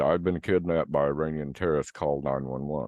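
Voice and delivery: normal talking voice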